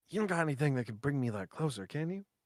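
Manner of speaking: hushed, private stage half-whisper. Playing a character in a roleplay, asking a companion for help: half-whispering. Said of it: "I'm gonna like whisper to Balloon".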